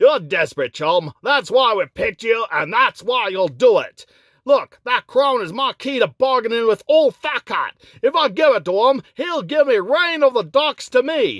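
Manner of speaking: put-on muddled English accent slipping into Scottish. A character presses a reluctant chum to go through with the plan, mixed English-Scottish accent. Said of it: "getting my English and Scottish accents mixed up there".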